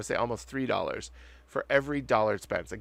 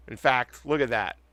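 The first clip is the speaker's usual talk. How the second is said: plain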